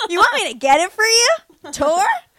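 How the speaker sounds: loud, drawn-out, goofy cartoon skateboarder voice. Speaker imitates their ex in a Nickelodeon-show voice. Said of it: "talked like he was in like a Nickelodeon show".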